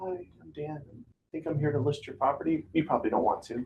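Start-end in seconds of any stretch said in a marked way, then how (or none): 0.0-2.6 meek, soft, unconfident, unsure tone. Coaching on listing presentations, showing the wrong way to walk in: timid, unconfident. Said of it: "Does this look confident to you?".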